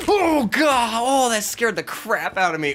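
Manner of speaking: sudden fright shriek, very high, shrill, very loud. Someone came out of nowhere and scared the speaker, a startled yell. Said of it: "I didn't mean to yell".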